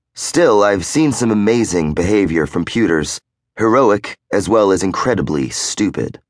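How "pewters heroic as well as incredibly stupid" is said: plain reading voice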